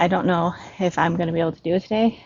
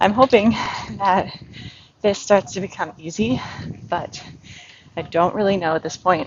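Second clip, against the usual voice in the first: out of breath, panting between halting words; 2 semitones higher than usual. In hot weather, the speaker keeps talking while unable to catch breath: out of breath. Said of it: "I can't even catch my breath right now".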